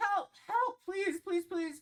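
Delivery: very high, loud, begging, pleading cries. A game narrator voices a struggling dwarf calling to the group, pleading for help. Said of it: "pleading towards the group".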